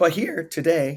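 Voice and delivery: voice breaking and cracking up high mid-phrase. Starting to introduce the episode's topic: voice cracking. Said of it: "little voice crack there".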